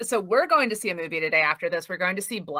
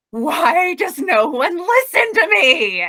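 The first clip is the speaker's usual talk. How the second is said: very loud, drawn-out meltdown yell; 9 semitones higher, 8 dB louder than usual. Retelling a scene where a character screams: imitating a scream. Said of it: "there is a scene where he just screams".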